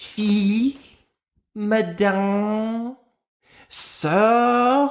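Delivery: high, French-accented pronunciation of the words.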